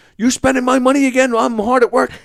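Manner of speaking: mock shrill, very high, loud, angry, accusing voice. Retelling a scene where a man is told to pretend to be the angry husband, mock-angry husband voice. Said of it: "pretend you're the angry husband".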